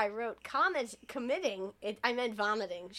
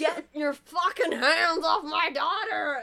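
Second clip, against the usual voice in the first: put-on loud, high drunken yelling; 6 semitones higher, 8 dB louder than usual. Retelling a movie scene, the drunk mother stumbles up: imitating a drunk mother yelling. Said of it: "why are you yelling at him?".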